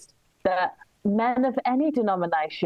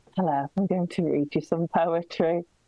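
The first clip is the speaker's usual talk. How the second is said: creepy, put-on man's poetry-reading voice. Impression of a man at spoken word poetry night, creepy man voice. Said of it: "this is my impression of a creepy man at spoken word poetry night".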